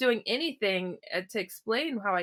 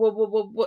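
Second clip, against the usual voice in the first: acted, awestruck, stunned stuttering; 5 dB louder than usual. Retelling the moment a man called him out, retelling stuttering in awe. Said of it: "I'm stuttering because I am just blown away".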